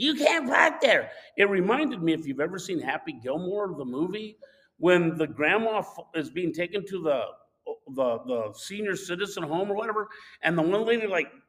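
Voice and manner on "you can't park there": put-on high, screaming woman's hollering yell. Retelling the lady screaming about parking: imitating a woman screaming. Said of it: "She's screaming".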